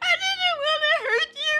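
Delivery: put-on tearful, crying speech. Retelling what they said after scratching Aster: imitating own past crying. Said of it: "and I started crying".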